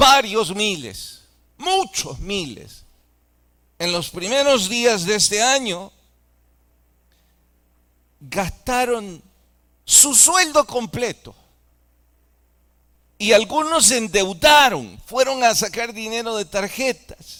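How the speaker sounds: bitter sarcasm with a touch of anger, frustrated. Speaking to an audience about people in their country, sarcastic and frustrated. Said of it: "lo digo con sarcasmo, con frustración".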